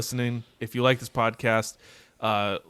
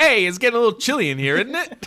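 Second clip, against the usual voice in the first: loud, high-pitched goofy voice; 12 semitones higher, 6 dB louder than usual. Imagining a casting pick as Mister Freeze: Steve Buscemi voice. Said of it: "Just imagine his voice like".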